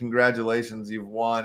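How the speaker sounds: normal talking voice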